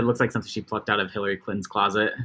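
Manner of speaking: plain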